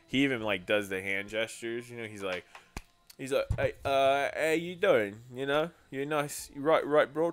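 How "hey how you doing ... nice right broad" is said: mock Cockney accent, slower. Imitating a man who sounds like a back-alley watch seller: Cockney accent. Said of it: "he can do a really good, like, Cogni accent".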